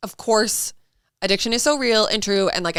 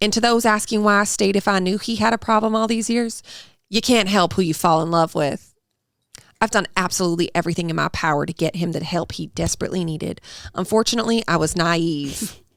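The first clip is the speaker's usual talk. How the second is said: put-on audiobook narration voice. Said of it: "You sound like the audiobook of Local Woman Missing".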